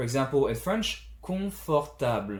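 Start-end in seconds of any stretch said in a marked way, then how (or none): 1.2-2.4 pitch falls on last syllable of "confortable". Comparing french and english pronunciation of confortable; pitch falls on last syllable. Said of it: "I go down with the last syllable".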